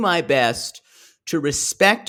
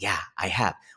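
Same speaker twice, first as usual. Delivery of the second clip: creaky, fried-out voice with a little vocal fry; 8 semitones lower, 8 dB quieter than usual. Retelling what a cast member said at a meeting: Ashley's vocal fry. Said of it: "with her little vocal fry".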